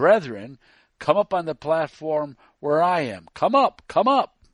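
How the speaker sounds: zealous, loud, bellowing preacher voice. A zealous man at a Sabbath meeting calls the brethren up to his platform, bellowing. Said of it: "This zealous one bellowed".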